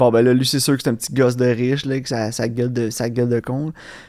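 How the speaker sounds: plain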